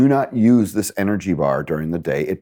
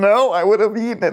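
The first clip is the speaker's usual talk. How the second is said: put-on very high, weepy child voice crying through tears; 13 semitones higher than usual. Describing kids who won a debate with their father, quoting them: imitating kids crying. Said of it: "And they're crying going".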